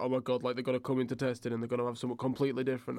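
thrilled, eager, hyped-up, excited gushing chatter. Retelling how the other speaker sounded in a message: imitating someone hyped. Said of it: "you were so hyped".

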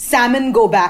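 ordinary talk, nothing marked

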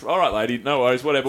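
ordinary talk

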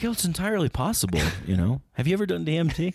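bouncy, animated, high voice, pitch swinging wide. Redoing a Joe Rogan impression from another podcast: Joe Rogan impression. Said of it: "your friend's impression of Joe Rogan".

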